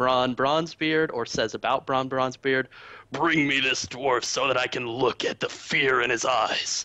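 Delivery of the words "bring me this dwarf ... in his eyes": rude, angry villain voice. Quoting a character's threat about a dwarf: Garrosh voice. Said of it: "Not that I do a good voice".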